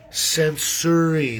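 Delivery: slowly spelled-out, drawn-out censuring.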